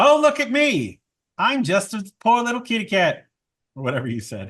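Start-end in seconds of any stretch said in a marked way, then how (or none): 0.0-3.3 squawky parrot-style copying voice. Voicing a parrot manticore that repeats a line back, Bosch impression. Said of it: "it's like a perfect Bosch impression".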